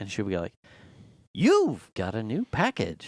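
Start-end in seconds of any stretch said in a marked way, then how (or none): 1.3-3.1 fake, artificially excited voice with swooping pitch. Imitating Alexa announcing a package: imitating Alexa's fake excitement. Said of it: "a fake excitement in the way it's delivered".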